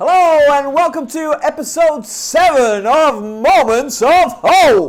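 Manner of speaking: high, loud, put-on TV announcer voice. Welcoming listeners to a new episode, TV announcer voice. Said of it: "That was my T V announcer voice".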